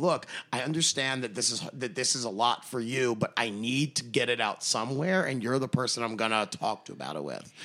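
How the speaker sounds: usual speaking voice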